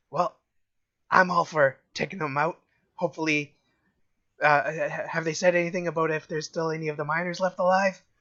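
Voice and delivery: quiet, hushed, spoken under the breath. Game master voicing Don John replying to a player, hushed tone. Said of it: "replies to you also in a hushed tone".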